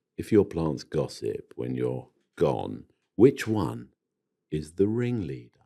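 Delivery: put-on sultry sexy voice, very low and soft. Reading out a listener's question on the podcast, the speaker uses a sexy accent. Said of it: "I'm going to do a sexy accent".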